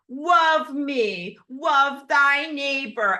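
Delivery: slow, high sarcasm dripping with rage and hatred. Voicing what an AI inside you says, with put-on dripping sarcasm and rage. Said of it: "my voice contains all of the dripping sarcasm and rage and hatred".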